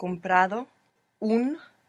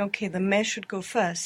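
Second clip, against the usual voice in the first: ordinary talk, nothing marked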